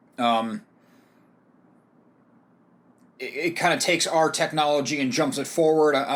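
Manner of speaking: stumbling, halting, stammering, broken-off phrasing. Reviewer introducing a movie before an interview, stammering a little. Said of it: "I'm stammering a little bit".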